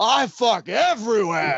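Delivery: over-the-top, hammy delivery pushed high in pitch. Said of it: "my favorite over-the-top Pacino line".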